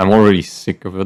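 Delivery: fed-up, irritated tone.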